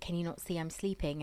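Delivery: normal talking voice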